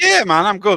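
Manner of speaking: loud, squeaky voice cracking. Answering a greeting, the speaker replies with their voice cracking. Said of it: "my voice cracked then".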